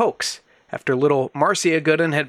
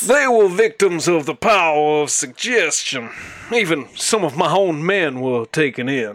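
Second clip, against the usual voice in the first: put-on Kentucky-style southern drawl. Quoting a police superintendent in a ghost story, the speaker uses a put-on Southern accent. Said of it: "Not Bridgeport, Kentucky".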